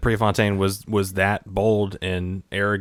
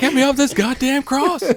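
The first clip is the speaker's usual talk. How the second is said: put-on screaming voice, higher and louder; 4 dB louder than usual. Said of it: "just screaming".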